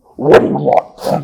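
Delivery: put-on ogre voice. Voicing a big ogre who stomps over to a prisoner: ogre voice. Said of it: "a big ogre steps out".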